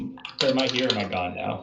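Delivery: very confused, lost, bewildered tone. Voicing a character turning around in a tavern: confused. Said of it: "very confusedly say".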